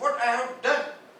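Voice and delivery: loud indignant outburst.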